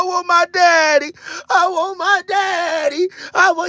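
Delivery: very slow, drawn-out crying and sobbing. Retelling crying together with a friend over a missing daddy: mock crying. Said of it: "We was crying together".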